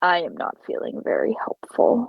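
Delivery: very quiet, whispered grumble under the breath. Narrating a story, voicing a character who was just shot, muttering to himself. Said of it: "he mutters to himself".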